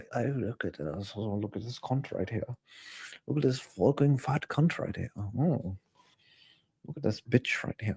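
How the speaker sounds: whispered, poor, fake British accent. Admitting they can't do one, then trying a bad British accent. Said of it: "Can't do a British accent".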